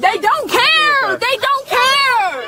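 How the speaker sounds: high, slow, despairing wail.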